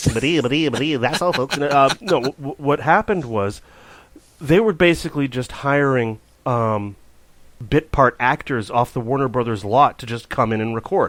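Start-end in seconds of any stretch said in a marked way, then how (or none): 0.0-1.6 put-on stuttering cartoon pig voice, much slower. Co-host suggesting the other did the voice, doing a stuttering cartoon pig voice. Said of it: "Maybe you did the voice".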